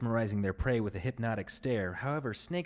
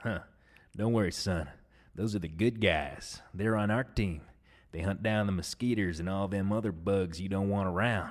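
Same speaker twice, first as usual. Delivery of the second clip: put-on dad voice with a thick accent; 3 semitones lower than usual. Quoting his dad's reply from his childhood, in a put-on accent. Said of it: "I wanted to do that accent".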